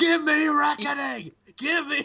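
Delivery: very high, loud hollering yell. Tell the others what a man was yelling, imitating someone yelling. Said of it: "Xavier Woods just yelling".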